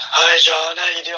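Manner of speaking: mock sultry husky bedroom voice. Retelling how the other speaker sounded after losing her voice: imitating a husky bedroom voice. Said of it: "bedroom voice".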